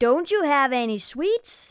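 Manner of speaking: cranky, grumbling voice. Reading a children's story: a monster asks the narrator a question, grumpy voice. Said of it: "He asked in a grumpy voice".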